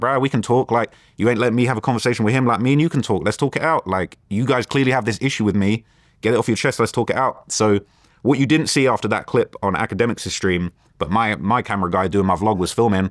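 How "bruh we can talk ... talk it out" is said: plain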